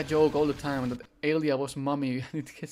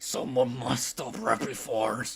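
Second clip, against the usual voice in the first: mock-angry, irritated delivery at lower pitch; 4 semitones lower, 4 dB quieter than usual. Reacting to a game scene, the speaker repeats a character's line, mimicking pissed-off delivery. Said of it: "I love how pissed off he sounds".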